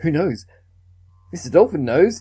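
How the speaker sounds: dazed, weird musing. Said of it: "she's acting all dazed".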